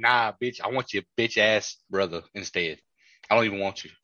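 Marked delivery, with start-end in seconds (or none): none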